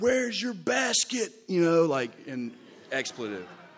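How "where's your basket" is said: shrill yell, pitched very high. Retelling what someone in a pack of kids yelled: imitating someone yelling. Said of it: "somebody yelled".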